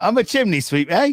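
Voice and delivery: bad put-on Cockney accent.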